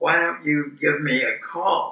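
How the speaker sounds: put-on whispering voice. Retelling a goodbye after dinner where she leaned over: imitating a whisper. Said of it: "leans over and whispers".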